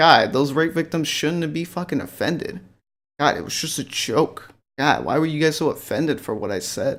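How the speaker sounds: plain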